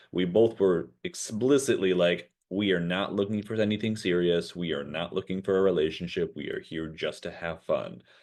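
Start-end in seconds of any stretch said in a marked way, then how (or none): none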